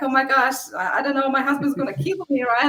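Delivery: acted-out panicked voice. Retelling finding the trashed property after the guests left: acting out own past panic.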